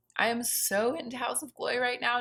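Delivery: slow delivery, voice cracking partway through. Praising a product she is excited about, voice cracking. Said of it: "Did you hear my voice crack".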